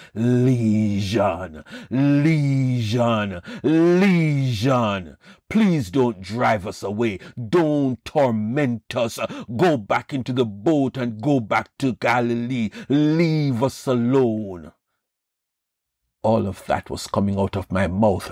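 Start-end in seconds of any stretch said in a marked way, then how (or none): 0.2-14.8 slow, blood-curdling demonic voice, "lesion" drawn out. Recounting words that came out of their own sealed mouth, in a blood-curdling voice. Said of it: "in a blood-curdling voice".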